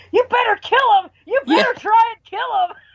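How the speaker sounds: very high, shrill scream. Recalling watching a scene, the speaker retells screaming at the tv. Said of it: "I'm screaming at my TV".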